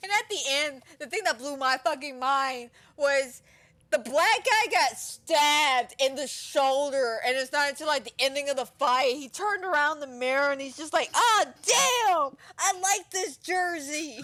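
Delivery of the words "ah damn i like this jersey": mock very slow, pitched-up, upset lament. Retelling a fighter noticing his stabbed jersey: imitating someone upset. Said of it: "he was really upset about that jersey".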